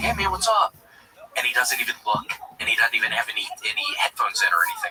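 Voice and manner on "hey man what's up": carrying, audible stage whisper. Retelling greeting the new guy: imitating own loud whisper. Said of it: "'cause I whispered, kind of a loud whisper".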